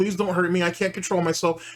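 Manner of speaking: mock crying, acted sobbing plea. Mocking a man said to have begged on hands and knees; imitating someone crying. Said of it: "crying like a bitch saying".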